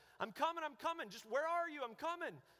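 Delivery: high, repeated shouting over and over. Running toward a voice calling for help, the speaker recalls yelling back: retelling a yell. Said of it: "I started yelling".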